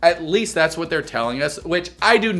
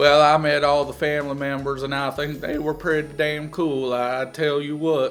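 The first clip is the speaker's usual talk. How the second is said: mock flat, monotone delivery; 4 dB quieter than usual. Mocking the girlfriend on a reality show: imitating a monotone voice. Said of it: "She's always monotone".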